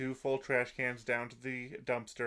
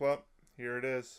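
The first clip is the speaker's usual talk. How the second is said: mock flat, deadpan delivery. Retelling a scene where a girl lifts up the missing money, retelling a deadpan line. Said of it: "she deadpan just lifts it up".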